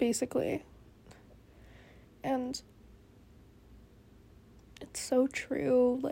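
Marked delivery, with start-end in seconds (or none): 2.2-6.0 talking through a yawn. Speaker who really needs to go to bed, yawning. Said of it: "sorry, I'm yawning".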